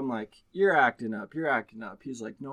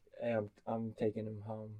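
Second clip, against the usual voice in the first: put-on calm, quieter voice; 2 semitones lower, 9 dB quieter than usual. Retelling what Adam said as the fight neared, imitating Adam sounding calm. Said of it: "in a calm voice just says like".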